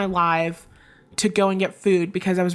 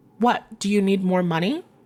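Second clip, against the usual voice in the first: put-on condescending, patronizing, talking-down voice. Retelling an argument over a small amount of money, imitating a condescending tone. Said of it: "in this very condescending tone".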